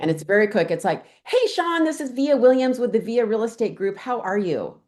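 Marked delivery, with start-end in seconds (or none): 1.2-4.7 energetic, friendly, approachable, bright, pitched-up tone. Showing a short phone script for calling a lead: energetic friendly voice. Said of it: "with that energy in your voice, you just seem so approachable, so friendly".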